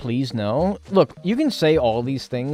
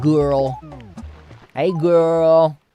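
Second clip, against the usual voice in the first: put-on lingering, stretched-out "girl" with long vowel; 4 semitones higher, 5 dB louder than usual. Showing how a chat greeting must be said: showing how "girl" is said. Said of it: "you have to say it like".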